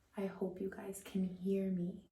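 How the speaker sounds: hushed whisper. Vlogger recording while everybody is sleeping, whispering. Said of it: "so I have to whisper".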